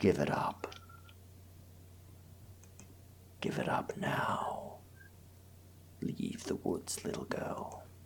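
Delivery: deep, wolf-like whisper. Narrator voices the closest growling wolf, speaking to the player's character, in a deep wolfy voice. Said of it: "in a very wonderfully deep, wolfy kind of voice".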